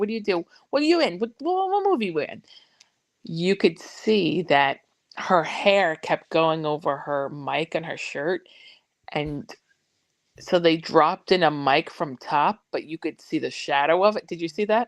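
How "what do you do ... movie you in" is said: mimicked motherly talk, pitched higher. Retelling a sketch by two characters who talk like mothers: imitating women who talk like mothers. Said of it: "The two girls who talk like our mothers".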